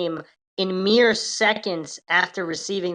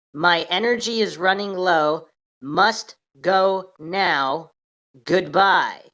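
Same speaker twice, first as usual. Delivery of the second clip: deliberate, very slow, drawn-out delivery. Narrator reads a man's last words as he gets to his feet; very slow. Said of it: "said very slowly".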